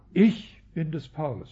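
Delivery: the word ich hit hard, heavily stressed. Quoting a saying and pointing out the stress: stress on ich. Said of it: "das Ich ist betont".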